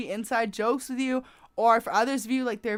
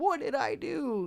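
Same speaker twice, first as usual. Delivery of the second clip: put-on soft, slow, sad masculine voice; 4 semitones higher, 5 dB quieter than usual. Acting out how a distant person feels, not mocking: imitating a sad masculine voice. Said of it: "I'm not a good masculine voice".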